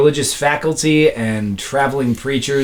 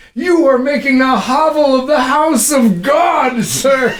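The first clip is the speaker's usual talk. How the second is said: put-on very high, scolding, screaming preacher voice; 10 semitones higher than usual. Retelling a preacher outside the chapel screaming at them for smoking, imitating a screaming preacher. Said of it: "He was screaming at me".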